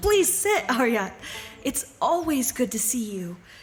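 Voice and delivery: glad voice. Cordelia answers an old man asking to sit beside her, happy.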